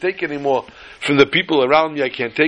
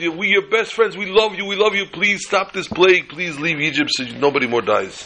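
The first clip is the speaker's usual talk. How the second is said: mock desperate pleading; 3 semitones higher than usual. Telling a joke, voicing the Egyptians as they beg, mock begging. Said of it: "they beg you".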